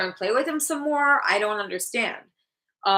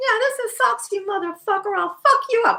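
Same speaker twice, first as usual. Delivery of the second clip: put-on stuffed toy cat character voice; 12 semitones higher, 3 dB louder than usual. Asked about Socks the cat, the speaker does Socks the cat voice. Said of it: "that's a stuffed toy cat's voice".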